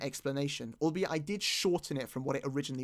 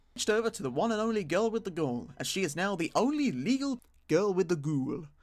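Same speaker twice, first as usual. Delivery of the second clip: put-on British accent, badly done; 4 semitones higher than usual. Speaker announces a switch in their group, in a put-on British accent. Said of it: "that was my British accent coming out".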